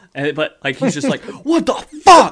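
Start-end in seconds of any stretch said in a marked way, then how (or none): 1.2-2.3 mock-angry screaming, much higher, louder, slower. Describing a guy who screams at every mistake, retelling his angry scream. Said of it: "screaming, like, angrily".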